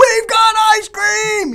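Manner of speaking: put-on very high, loud, slow, excited child-like yell.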